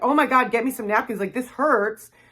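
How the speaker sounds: play-acted caught-off-guard, stunned, shocked blurt. Retelling a coffee burn at the drive-thru, imitating own shocked self. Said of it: "Now I'm in shock".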